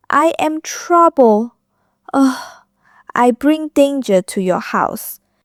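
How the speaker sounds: speaking in a small voice. Narrator reads Vaughan's reply to Stuart, in a small voice. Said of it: "Vaughan said in a small voice".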